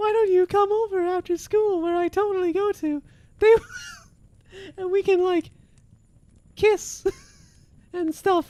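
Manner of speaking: squeaky voice swooping up and down. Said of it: "Why is this vaguely Mickey?".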